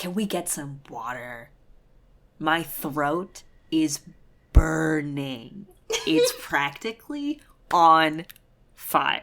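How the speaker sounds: mock overdramatic, very slow, drawn-out, swooping delivery. Retelling a character's hint to another character: imitating an overly dramatic hint. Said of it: "this whole dramatic thing of being like".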